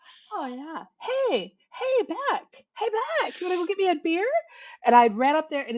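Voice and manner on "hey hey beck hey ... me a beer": sweet, higher-pitched put-on voice. Retelling how an uncle asked for a beer: imitating Uncle Don asking nicely. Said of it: "'Cause he always asked so nice".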